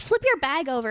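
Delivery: normal talking voice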